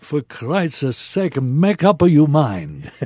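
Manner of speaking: put-on loud, broad Italian accent. Retelling a sudden voice calling out to a couple: big Italian voice. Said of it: "comes this big Italian voice says".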